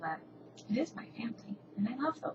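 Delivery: moved, soft, breathy, almost whispered, a little emotional. Telling the family story of HCM to website visitors: getting a little emotional. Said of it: "sorry for getting a little emotional".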